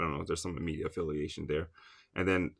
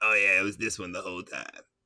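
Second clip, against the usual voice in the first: cartoonish eighties comic-book bad-guy villain voice. Speaker pretends he was sure all along, in a 1980s comic villain voice. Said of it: "like a nineteen eighties comic villain".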